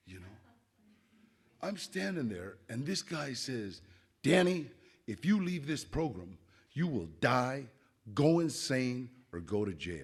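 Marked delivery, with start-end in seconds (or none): 4.2-10.1 hushed, dire, half-whispered stage whisper. Retelling a guy's curse about leaving the program: imitating a half-whisper. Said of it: "He whispered the curse".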